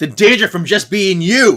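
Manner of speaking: loud, high, heated, genuinely angry outburst. Reading a comic's line aloud for Henry mid-fight: real angry. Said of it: "And Henry is real angry".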